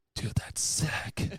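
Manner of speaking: hushed, breathy whisper under the breath. Retelling a reply to a friend's call while hunting: retelling a whisper. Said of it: "Like, whispering".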